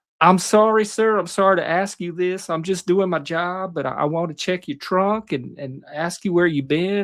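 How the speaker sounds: put-on real heavy Southern accent, courteous and polite tone. Retelling a polite cop who stopped him, in a thick Southern accent. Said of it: "He had a real thick Southern accent".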